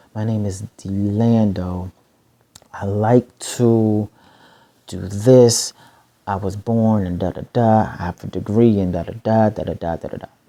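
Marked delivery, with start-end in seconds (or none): 0.2-2.0 slow, quieter delivery. Showing how he introduces himself, the speaker says his name: saying name slowly. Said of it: "I say it slow".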